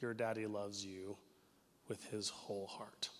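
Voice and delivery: soft, gentle half-whisper. Retelling tucking in a daughter at bedtime: retelling a half-whisper. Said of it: "I lean over and I whisper into their ear".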